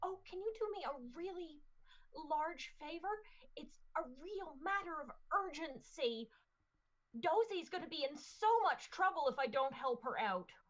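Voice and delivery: hushed stage whisper. Playing a character asking a stranger for an urgent favor: hushed tones. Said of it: "in, like, hushed tones".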